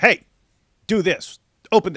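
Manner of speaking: bossy, loud, high-pitched put-on robot voice. Retelling how a caller blasted orders: imitating someone blasting orders. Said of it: "starts blasting orders".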